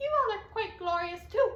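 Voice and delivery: small, tiny, high peeping little voice. Reading a story aloud, tiny Rosa speaks: tiny peeping voice. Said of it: "peeped tiny Rosa, in a voice like a tiny rose".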